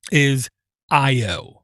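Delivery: deliberately slow delivery, drawn-out words. Pointing out what this board has over a Nook, speaking really slowly. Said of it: "I'm saying this really slowly".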